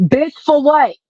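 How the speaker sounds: mock sudden blurted outburst. Retelling a reply to a stranger on a bus: reenacting a blurted outburst. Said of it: "it blurted out".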